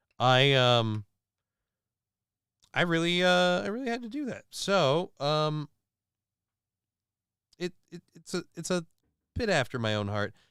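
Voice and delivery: stammering, tripping over words. Speaker recording a review, stuttering and stammering. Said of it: "I'm sorry I'm stuttering and stammering here".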